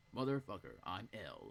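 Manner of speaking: put-on robotic computer voice. Speaker doing a quick voice bit in an MLG computer-type voice. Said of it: "That was an M L G computer type voice that I did".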